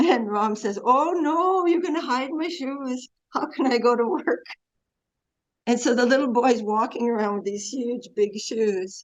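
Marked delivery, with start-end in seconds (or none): 0.8-4.4 put-on strong accent of northern England. Retelling what Ram said to the little boy, in Ram's strong northern accent. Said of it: "He had a very strong northern accent".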